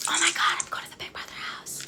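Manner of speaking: barely voiced, soft, breathy whisper. Retelling a key ceremony with a sleeping baby nearby: retelling own whisper. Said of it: "and I'm whispering".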